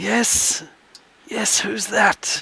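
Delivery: feeble, breathy, frail, near-whispered voice. The door opens and someone answers from the other side in a frail voice. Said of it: "you hear a frail voice come from the other side".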